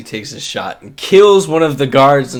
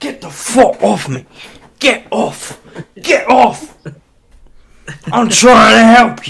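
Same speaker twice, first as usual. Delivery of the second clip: shrill, very high-pitched hollering; 10 semitones higher, 4 dB louder than usual. Storyteller voicing a character as a player jumps on his back, yelling. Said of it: "he's yelling all this".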